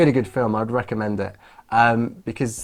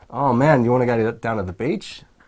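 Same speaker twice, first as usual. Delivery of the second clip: put-on Australian accent. Showing how Australians sound, in an Australian accent. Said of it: "I'm doing Australian".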